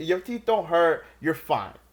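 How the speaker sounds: loud, scolding motherly tone. Retelling a phone call where Mom refuses the surgery: imitating Esperanza's scolding. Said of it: "I'm like".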